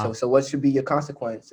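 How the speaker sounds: ordinary talk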